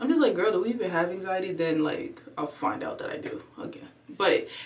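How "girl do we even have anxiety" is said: ordinary delivery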